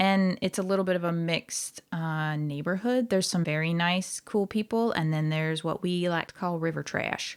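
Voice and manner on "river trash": Southern American accent on the phrase. Describing some Northern California neighbors, says one phrase in a Southern accent. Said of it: "I don't know why I said that in a Southern accent".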